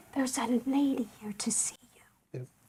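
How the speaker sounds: hushed whisper, very quiet, barely audible. Missus Hudson announcing a visitor to Mister Holmes, whispering. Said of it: "Why are you whispering?".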